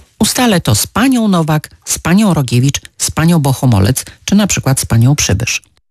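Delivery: plain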